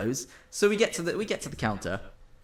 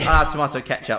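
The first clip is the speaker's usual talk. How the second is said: normal talking voice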